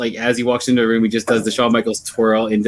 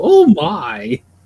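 put-on shocked old lady voice, much higher; 5 semitones higher, 4 dB louder than usual. Describing a grandma voice they would always do, imitating a shocked old lady. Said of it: "I would always go".

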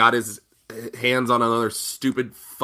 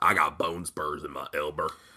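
put-on good old boy voice, lower and quieter; 8 semitones lower, 7 dB quieter than usual. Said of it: "I like my Braun impersonation".

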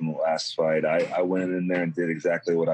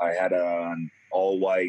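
ordinary talk, nothing marked

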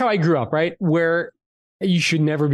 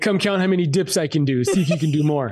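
usual speaking voice

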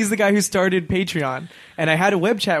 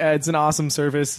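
ordinary delivery

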